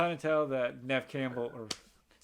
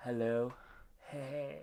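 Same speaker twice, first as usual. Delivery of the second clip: creepy put-on voice, quieter; 7 dB quieter than usual. Retelling a scene where the phone rings, say the caller's greeting in a creepy voice. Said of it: "it's the creepy voice".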